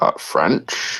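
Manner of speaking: low, hushed whisper that sounds puzzled.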